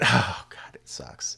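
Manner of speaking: low, whispered groan.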